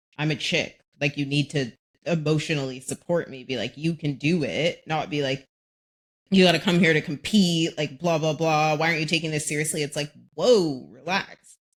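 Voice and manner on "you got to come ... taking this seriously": ordinary delivery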